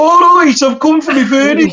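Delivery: put-on Birmingham accent. Retelling a buyer arriving at the door: imitating a Birmingham accent. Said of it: "that's Birmingham".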